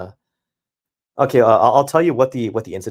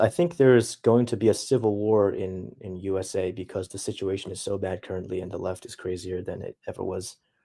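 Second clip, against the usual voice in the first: ordinary delivery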